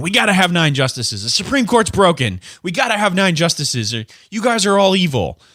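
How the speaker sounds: high, outraged, indignant screaming rant. Retelling what Democrats are saying about the court: imitating Democrats screaming. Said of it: "Democrats that are screaming".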